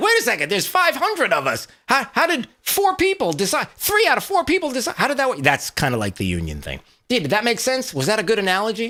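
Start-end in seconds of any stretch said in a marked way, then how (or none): 0.0-5.4 high, objecting, protesting tone with rising pitch. Explaining dues decided by four people, imitating union members' reaction. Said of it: "Everybody's like".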